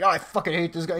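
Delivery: plain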